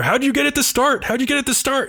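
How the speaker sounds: shrill yelling, voice pushed very high. Retelling how a short mechanic yells at her: imitating someone yelling. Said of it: "yelling at her".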